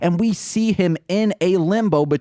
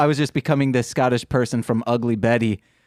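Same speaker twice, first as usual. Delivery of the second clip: ordinary talk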